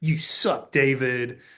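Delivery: stiff, stern, no-nonsense banker voice. Retelling how the banker was supposed to sound: imitating a staunch banker. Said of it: "real staunch".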